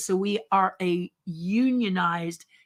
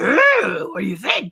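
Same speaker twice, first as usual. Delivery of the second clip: silly cartoon voice, louder; 5 dB louder than usual. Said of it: "animation voices and silly voices like this".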